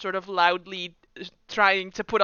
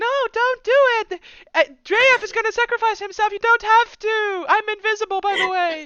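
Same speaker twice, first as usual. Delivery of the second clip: very high, shrill, loud put-on disguise voice; 7 dB louder than usual. Game master voicing someone heard through a door, high-pitched voice. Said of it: "put on like a high high pitched voice".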